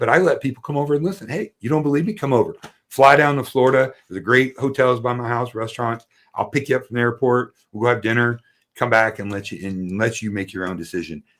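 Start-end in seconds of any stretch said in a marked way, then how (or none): none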